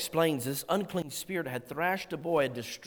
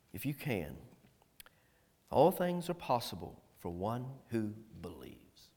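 very deep, soft, compassionate voice; 7 semitones lower, 6 dB quieter than usual. Speaker voices Jesus answering the child's father; imitating Jesus's compassionate tone. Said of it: "imagine the voice of the master".

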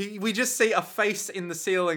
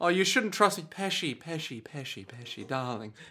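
put-on affectionate boyfriend voice, quieter; 2 semitones lower, 5 dB quieter than usual. Voicing a game character talking to Pesci, doting boyfriend voice. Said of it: "sound like just boyfriend and boyfriend, just being all like".

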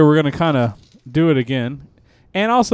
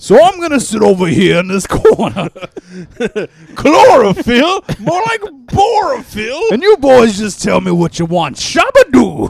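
put-on heavyset old man voice, pitched up; 7 semitones higher, 4 dB louder than usual. Playing Santa who is really Adam Sandler: Adam Sandler voice. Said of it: "you sound like old fat Adam Sandler".

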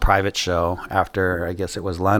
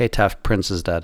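put-on flat, unempathetic, uncaring tone. Retelling how an artist broke the news: imitating an unempathetic tone. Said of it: "non-empathetic at all".

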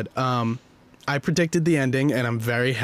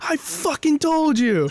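top-of-the-lungs, very high, drawn-out scream. Retelling shouting at a roommate after predicting the movie ending: retelling a scream at top of lungs. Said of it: "I literally screamed at the top of my lungs".

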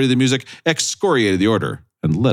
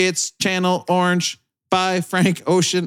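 robotic voice, much higher and slower; 10 semitones higher than usual. Speaker demonstrating how the album title is supposed to be pronounced, robotic-sounding voice. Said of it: "It sounded like a robot".

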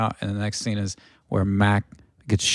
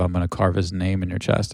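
usual speaking voice

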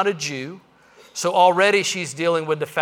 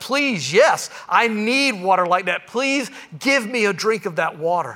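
mock, near-desperate begging tone; 3 semitones higher than usual. Retelling a woman's words to Jesus: acting out a desperate plea. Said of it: "she says to him almost desperately".

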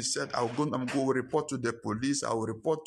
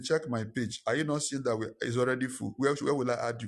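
plain

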